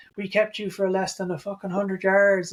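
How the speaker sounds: mock screaming. Retelling what a mic'd-up player screamed at Hurts: imitating someone screaming. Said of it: "he's screaming at Hurts".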